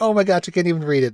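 big giggle bubbling through. Retelling a movie scene where Suki pretends to read a letter: imitating Suki's big giggle. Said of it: "she does this, like, very big giggle".

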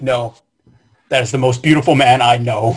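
solemn serious tone. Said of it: "my very serious, like, voice".

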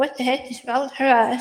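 ordinary talk, nothing marked

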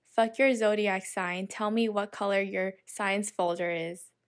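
ordinary talk

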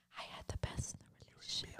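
mock soft, voiceless ASMR whisper.

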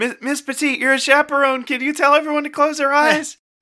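very high, loud crying out. Calling out in character to a chaperone in a panicking crowd. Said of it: "Belkson cries out".

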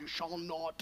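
very deep, very low, soft, hushed put-on voice. Quoting the Ten Commandments as God, in a Sean Connery voice. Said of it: "God saying it with the Sean Connery voice".

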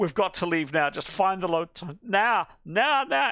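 screaming hysterically. In a game, the narrator voices a non-player character, screaming hysterically. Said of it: "She just screams".

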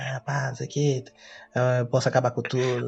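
wicked, hushed whisper. Retelling how someone pressured a woman to sign, like Satan whispering in the ear. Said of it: "que nem satanás sussurrando no ouvido assim".

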